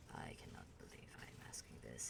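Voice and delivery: very quiet, low, hushed under-the-breath half-whisper. A character speaks to an investigator, half-whispering very quietly under his breath. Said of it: "He whispers this very quietly under his breath".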